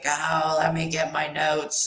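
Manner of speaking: put-on real deep voice of an older lady. Describing an older lady whose name they forget, deep older lady voice. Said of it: "she got that real that real like that real deep voice".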